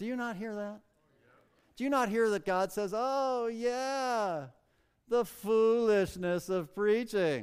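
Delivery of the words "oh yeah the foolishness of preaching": very slow, scoffing, sarcastic drawl. Quoting a scripture phrase with his own added tone: mocking, sarcastic tone. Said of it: "I detect just a hint of sarcasm. ... the tone is totally mine, not the Lord's".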